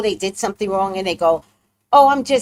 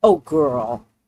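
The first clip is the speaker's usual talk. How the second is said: mock exaggerated tone, much lower pitch; 7 semitones lower than usual. Speaker mocking someone of another race greeting them, mocking someone's put-on tone change.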